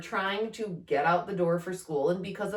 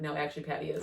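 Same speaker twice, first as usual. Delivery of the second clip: put-on whisper, quieter; 5 dB quieter than usual. Retelling a quiet remark so a sibling on the stairs wouldn't hear: retelling a whisper. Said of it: "what I actually said to Andy in a whisper".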